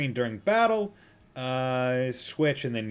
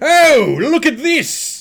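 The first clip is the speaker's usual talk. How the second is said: mock sports announcer voice, higher and louder; 13 semitones higher, 13 dB louder than usual. Mocking a color commentator during an emergency scene: imitating a sports announcer. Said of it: "I'm going to speak like I'm a sports announcer".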